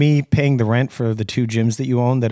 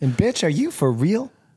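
put-on woman's voice, pitched higher; 7 semitones higher than usual. Recapping what Jordan told Danielle, in a Jordan impression.

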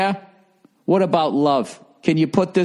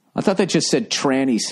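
usual speaking voice

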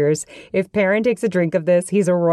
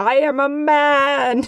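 put-on very slow, high shout, "man" stretched long; 8 semitones higher than usual. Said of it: "Perrin randomly yelled out".

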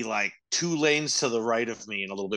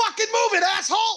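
mock very high, loud, aggressive angry yell; 5 dB louder than usual. Imagining what a siren might say, a mock-aggressive shout. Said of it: "that was back aggressive again".

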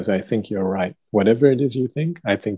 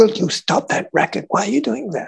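very high, rasping, rough put-on yelling; 13 semitones higher than usual. Retelling how a director treated a stagehand: imitating a director yelling. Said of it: "she yells out and says".

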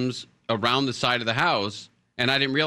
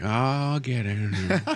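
put-on very old man voice, much slower. Speaker retelling a 98-year-old man at the diving board, imitating a 98-year-old man. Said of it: "it sounds like your dad's old character".

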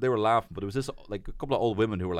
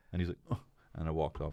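ordinary delivery

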